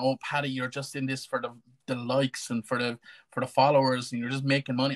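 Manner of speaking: ordinary talk, nothing marked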